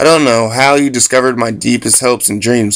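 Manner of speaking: ordinary delivery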